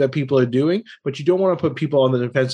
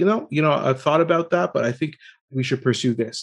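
mock unruffled, calm, firm, respectful but unbending tone. Recalling how a child's father answered a proposed treatment, imitating a calm, polite tone. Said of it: "in the most calm way".

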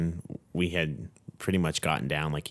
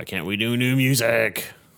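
raised, high, put-on moody, angst-filled tone; 6 semitones higher, 5 dB louder than usual. Recalling a band rehearsal, imitating their own past angsty tone. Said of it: "angsty and being like".

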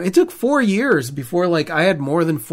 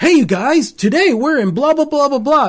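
obnoxious vlogger voice, raised pitch; 9 semitones higher, 4 dB louder than usual. Retelling old travel videos, imitating an overly obnoxious vlog intro. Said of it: "an overly obnoxious".

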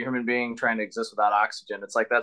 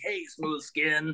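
pitched-up, high mutant creature voice; 5 semitones higher, 6 dB quieter than usual. Recalling the game Fallout to another speaker: Fallout ghoul voice. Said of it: "when the ghouls are like".

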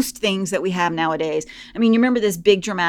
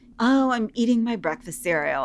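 put-on serene, unbothered, placid, calm tone; 4 semitones higher, 3 dB quieter than usual. Retelling a cereal ad where a woman eats breakfast: imitating a placid tone. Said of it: "all placidly".

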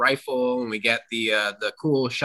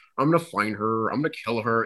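weird villain voice, much lower; 2 semitones lower than usual. Describing a smug film villain's scene, in a weird, almost Buffalo Bill voice. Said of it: "that weird, like, almost Buffalo Bill voice".

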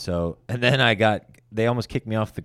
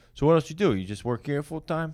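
put-on New York accent, pitched up; 7 semitones higher than usual. Retelling what a comedian asked at the hotel, imitating a New York accent. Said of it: "He's like, a New York accent".

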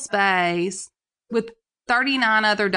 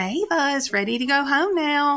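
nicest, calmest, sweetest high motherly voice; 5 semitones higher than usual. Quoting how she announced each pickup: mock-sweet, calm mommy voice. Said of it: "she said it in her homeschool mommy voice, you know, the nicest, calmest, sweetest".

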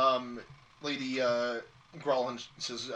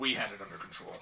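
soft growled retort; 5 semitones lower, 6 dB quieter than usual. Storyteller voicing one of the guards answering the group, growling. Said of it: "One of the guards growls and says".

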